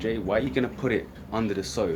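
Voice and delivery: normal talking voice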